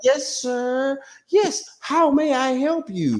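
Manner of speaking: very slow, high, proper, polite professional voice. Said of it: "You like, you like".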